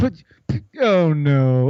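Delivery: pathetic, epic failure voice.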